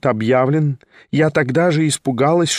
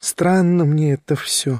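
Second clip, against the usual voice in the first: grumbled, mumbled with faint disgust. In a read novel, a woman breaks a long silence with her visitor, muttering almost squeamishly. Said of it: "пробормотала она вдруг чуть не брезгливо".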